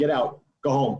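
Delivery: imitated Brooklyn accent. Retelling a man sending a guy in a sweater home, Brooklyn accent. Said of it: "he had a Brooklyn accent".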